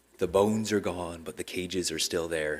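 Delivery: quiet, dead-level, droning, very monotone delivery. Recalling a line from a former history class, Gerald Martin's very monotone voice. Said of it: "in a very monotone voice".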